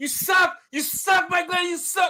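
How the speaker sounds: shrill, very loud, very high screaming jeer. Retelling taunting Mike Glennon at a game in Chicago, retelling screaming at a player. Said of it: "And I'm over there screaming".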